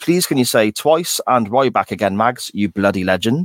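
ordinary talk, nothing marked

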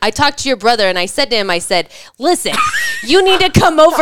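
tough, wise-guy mobster talk. Retelling how mom tells a story: imitating mom's wise guy voice. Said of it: "she talks like a wise guy".

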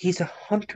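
hushed near-whisper. Turning to another character in a scene: whispering in character. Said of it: "like, almost, like, whisper".

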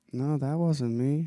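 mock calm delivery. Retelling a movie scene, quoting a character's denial: imitating a calm denial. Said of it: "how calm he's able to just be like".

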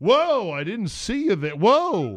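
loud, swooping, heavily sarcastic whoa. Retelling what he said to a man who skipped him in line, laying on sarcasm. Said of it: "I laid on the sarcasm".

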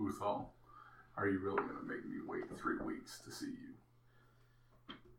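muttering, mumbling half to himself. Sigurd looks out as the group sets off, mumbling. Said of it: "starts mumbling".

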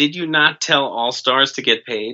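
usual speaking voice

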